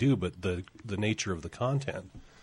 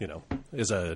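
ordinary talk

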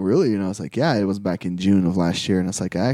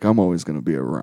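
laid-back, cool, easy-going cool-guy voice; 3 semitones lower than usual. Retelling what Ron Perlman said at a Comic Con: Ron Perlman impression. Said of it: "a really good impression of Ron Perlman".

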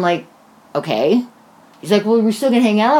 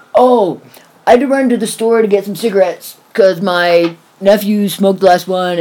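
put-on slurred drunk speech. Retelling a phone call with a very drunk caller: imitating drunk slurring. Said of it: "So he's slurring his words".

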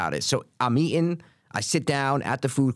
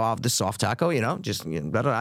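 ordinary talk, nothing marked

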